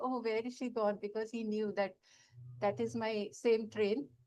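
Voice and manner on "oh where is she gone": ordinary talk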